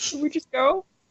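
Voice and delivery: put-on frog puppet character voice. Imitating how another player voiced a guard: Kermit the Frog voice. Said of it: "It sounded very Kermit".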